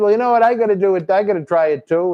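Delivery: plain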